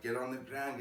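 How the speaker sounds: ordinary delivery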